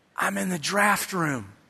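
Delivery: hushed, secretive half-whisper under the breath. A dad recalls his call home to his son from the draft room: retelling a half-whisper. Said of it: "why are you whispering?".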